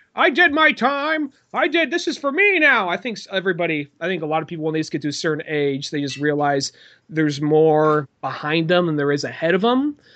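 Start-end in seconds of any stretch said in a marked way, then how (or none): 0.2-2.9 very high, slow, drawn-out entitled voice. Talking about old people, acting out an entitled one: mock-entitled old person. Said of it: "those that are just like very entitled".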